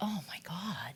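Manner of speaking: reverent, awed exclamation. Explaining how their family says the phrase: reverent. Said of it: "we say it with a kind of reverence".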